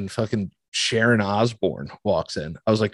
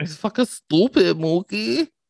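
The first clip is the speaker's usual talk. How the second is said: put-on New York accent, higher pitch; 10 semitones higher than usual. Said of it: "Her fucking voice is so next level".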